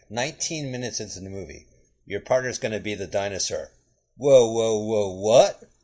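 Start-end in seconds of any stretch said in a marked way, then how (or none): 2.0-5.5 loud, unconvincing delivery, meaning none of it. Doing an impression of Whoopi Goldberg's acting in the movie: Whoopi Goldberg acting impression. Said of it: "here's my impression of her acting".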